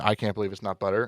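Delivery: ordinary delivery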